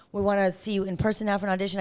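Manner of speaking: plain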